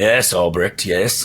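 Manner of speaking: low, rough-edged voice. Voicing the father answering his son from another office: much deeper, gruffer voice. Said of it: "a much deeper, a little bit gruffer voice go".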